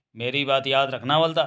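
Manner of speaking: plain reading voice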